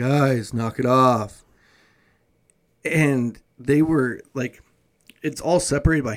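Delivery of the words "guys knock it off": play-acted, very nonchalant, casual, offhand, unbothered tone. Retelling how a dad told the kids playing tag to stop: imitating a very nonchalant dad. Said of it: "very, very nonchalantly being like".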